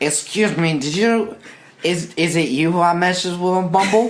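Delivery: put-on sloppy, stumbling drunk talk. Acting out approaching a woman while hammered drunk: acting hammered drunk. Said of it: "hammer drunk".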